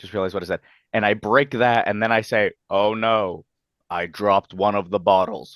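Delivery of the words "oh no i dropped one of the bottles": dead monotone, utterly flat, expressionless drone. Describing what they say after breaking a glass, in an extremely monotone voice. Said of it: "in the most monotone voice you have ever heard in your life".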